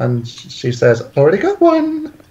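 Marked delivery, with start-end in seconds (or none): 1.2-2.1 very high put-on voice. Quoting Sunburst's mother answering Sunburst's plan, in a Rarity kind of voice. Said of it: "In a Rarity kind of voice".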